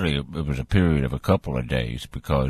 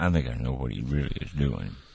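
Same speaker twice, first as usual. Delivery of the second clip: soft, hushed, secretive half-whisper; 2 semitones lower, 6 dB quieter than usual. Sharing a playful suspicion about an absent colleague: half-whispering. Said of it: "I'm gonna whisper this".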